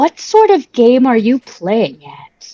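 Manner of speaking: sassy, saucy delivery with swooping pitch. Playing a character who confronts a boy in a corner: sassy in-character challenge. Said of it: "Sass this kid to an early grave".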